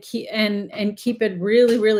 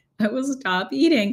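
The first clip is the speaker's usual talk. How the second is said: talking through laughter, higher pitch; 3 semitones higher than usual. Explaining fruit eating while a dog waits nearby: laughing while talking. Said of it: "I'm laughing because one of my dogs".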